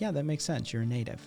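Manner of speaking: put-on soothing voice. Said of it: "the lack of the bass in my voice because, you know, I'm just trying to soothe Tony".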